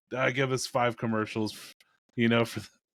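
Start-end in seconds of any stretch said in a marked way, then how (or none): none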